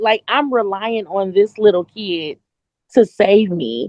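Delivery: plain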